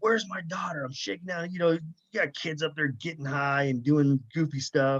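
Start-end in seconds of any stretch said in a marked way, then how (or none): 0.0-0.8 mock seething, enraged delivery, pitched high. Retelling searching for a missing daughter, reliving an enraged shout. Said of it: "I'm in just such a rage".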